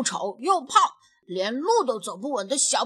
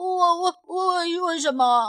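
high, frightened, halting stutter; 7 semitones higher than usual. Narrating a children's story, the rabbit boss answers the bullying rabbit: scared stammering. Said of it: "兔老大吓得七七巴巴地说".

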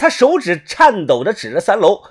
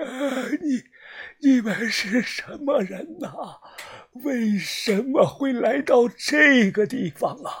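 very soft, hoarse, raspy, faltering, halting croak; 4 semitones higher, 9 dB quieter than usual. Narrating a story, the reader voices a ghost speaking in an extremely raspy voice. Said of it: "一道极其沙哑的声音响了起来".

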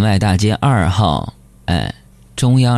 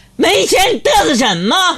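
big, very high-pitched, bellowing, roaring shout. Recounting a moment after a friend's quiet reminder, retelling a loud roar. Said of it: "于是我大吼一声".

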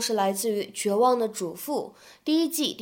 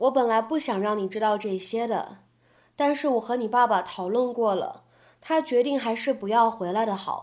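usual speaking voice

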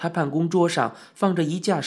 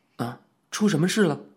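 usual speaking voice

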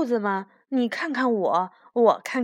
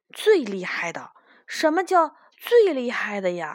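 ordinary delivery

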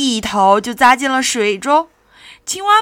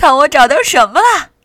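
gloating, pleased-with-himself call; 3 semitones higher, 6 dB louder than usual. Rolling a big stone home, he shouts to his two companions: smug shout. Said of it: "他洋洋得意地喊道".

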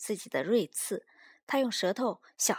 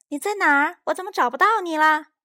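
startled, alarmed cry, high-pitched and very loud; 6 semitones higher, 11 dB louder than usual. Narrator voicing a character after another hides in the grass: alarmed exclamation. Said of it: "斯派克惊呼道".

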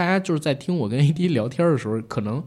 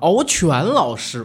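put-on mocking tone, higher pitch; 5 semitones higher, 4 dB louder than usual. Showing the tone used earlier when calling someone teacher: imitating own mocking tone. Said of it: "戏谑".

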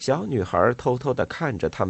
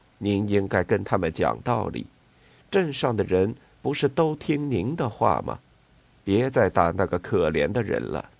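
ordinary delivery

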